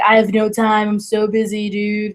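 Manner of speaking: put-on lazy, slow, drawled frat-boy voice. Retelling what a coworker said, imitating John Austin's frat voice. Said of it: "or whatever his little frat voice is".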